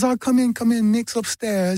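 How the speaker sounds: slow, high, drawn-out Texas drawl. Retelling how the woman answering the door greeted him, in Jerry Hall's Texas drawl. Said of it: "that Texas drawl".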